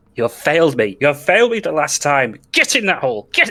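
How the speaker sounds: furious, angry female shouting, high and climbing. Narrating a scene behind a door, voicing a woman: angry woman shouting. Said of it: "you hear this shouting now".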